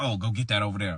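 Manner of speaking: acted out, bossy, domineering, commanding voice. Retelling how a girlfriend's mom gave orders: imitating a bossy mom. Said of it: "pretty bossy".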